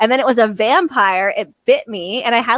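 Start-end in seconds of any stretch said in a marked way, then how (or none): none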